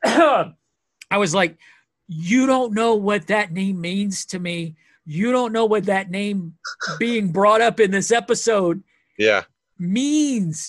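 overwhelmed, high, wildly excited, losing it completely. Recounting the reaction to a name brought up in an episode, losing it, overwhelmed. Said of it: "I'm losing my shit right now".

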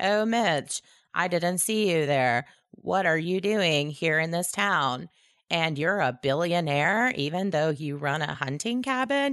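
parodied flat delivery. Mocking the dialogue of cheesy Christmas movies, deliver it as mock-deadpan movie dialogue. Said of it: "all of their dialogue is basically delivered deadpan".

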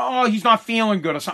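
normal talking voice

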